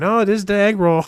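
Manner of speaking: attempted American accent. Retelling what a waitress replied when asked about the dish, attempted american accent. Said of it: "in the best American accent she could".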